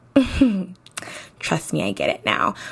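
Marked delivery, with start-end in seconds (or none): 1.3-2.5 serious voice dropped much lower. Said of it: "and I get it now".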